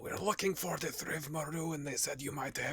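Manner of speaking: whispered. In character, explaining to her why they came, whispering. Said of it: "I'll keep whispering".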